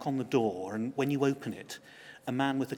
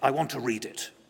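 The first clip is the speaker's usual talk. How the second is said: put-on deep German accent; 3 dB louder than usual. Retelling being asked to bring in a story: Klaus's deep German accent. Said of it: "a deep German accent".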